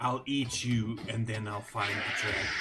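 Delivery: raspy, gravelly, hissing dragon voice. A creature answers you in Draconic in a hissing, gravelly voice. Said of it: "in this hissing, gravelly voice".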